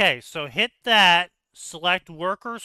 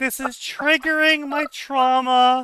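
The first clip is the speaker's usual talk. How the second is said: put-on high, tearful crying out into the mic; 7 semitones higher, 4 dB louder than usual. Retelling a caller's complaint: imitating someone crying loudly. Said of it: "she is crying into the mic loudly".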